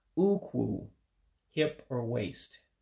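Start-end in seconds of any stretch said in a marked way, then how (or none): 0.1-0.8 ukwu with last syllable falling in pitch. Teaching the word ukwu, meaning hip or waist: falling pitch at end of ukwu. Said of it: "the end of the word descends. So you have to you have to drop your voice".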